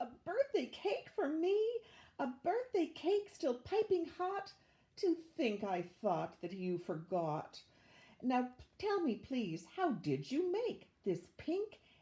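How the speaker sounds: high, delighted, joyful, gleeful cry. A mother dances with glee as her children come running: gleeful cry. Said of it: "Tired to the very bone, [name] groaned a groan. She'd take the eggs down from the shelf And whisper weakly to herself, "What persnickety young eaters Are all my seven little Peters!" / Tired to the ve".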